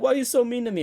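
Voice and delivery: high, loud, whiny begging, crying.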